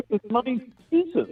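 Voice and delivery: high-pitched voice cracking. Answering a fantasy draft argument, voice cracking high. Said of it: "your voice got too high".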